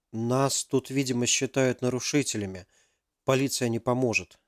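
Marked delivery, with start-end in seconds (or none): none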